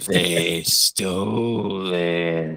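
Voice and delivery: slow, croaking, sickly, ailing creature voice. Narrating a shadowy creature repeating its words, in a slow, sick, croaking voice. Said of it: "a slow, sick voice creeps out of its throat as it croaks".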